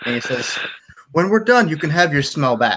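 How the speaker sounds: ordinary delivery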